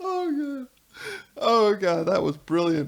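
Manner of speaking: high, tearful laughing exclamation. Reacting to a brilliant line heard on the call, crying with laughter. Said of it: "I'm actually crying".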